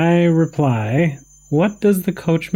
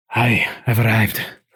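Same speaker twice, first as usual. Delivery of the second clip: put-on Irish accent, lower pitch; 7 semitones lower than usual. Urged to do the character's irish accent, quoting his line: irish accent. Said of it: "you'll see your Irish accent".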